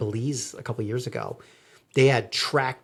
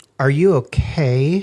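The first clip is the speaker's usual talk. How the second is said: raised, pointed, heavily passive-aggressive concern; 3 semitones higher, 6 dB louder than usual. Imitating a partner asking if they're okay: imitating an extra passive-aggressive question. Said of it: "Even more passive aggressive".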